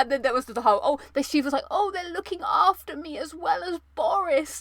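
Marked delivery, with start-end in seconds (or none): 1.7-4.6 put-on pitched-up old grandmother voice. Imitating her grandmother in hospital, in a grandma voice. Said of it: "I'll give you a little taste of the grandma voice".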